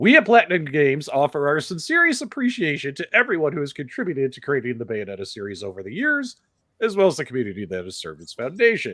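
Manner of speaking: mocking corporate statement voice.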